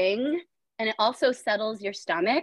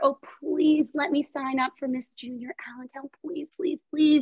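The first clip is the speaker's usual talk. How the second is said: put-on little-girl voice, childish begging, pleas stacked up; 4 semitones higher than usual. Woman retelling begging her mother as a little girl, imitating her childhood pleading. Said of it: "begged and pleaded to my mother".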